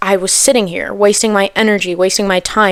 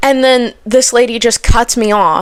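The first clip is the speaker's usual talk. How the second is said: ordinary talk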